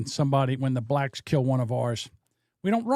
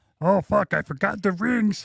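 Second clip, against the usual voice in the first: bad put-on frog puppet voice, higher; 7 semitones higher than usual. Joking about a wedding, forgetting the rings: terrible Kermit voice. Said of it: "We're terrible Kermits".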